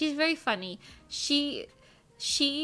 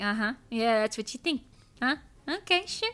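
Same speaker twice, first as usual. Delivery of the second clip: snippy, curt, dismissive tone. Describing how they act when sleepy, imitating being snippy. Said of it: "I'm just kinda snippy".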